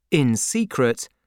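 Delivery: ordinary delivery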